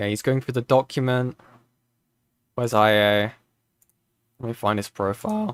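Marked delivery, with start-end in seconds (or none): 2.5-5.6 voice cracking, lower and slower. Searching for a profile while going through a document, speaker's voice is cracking. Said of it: "lovely voice crack".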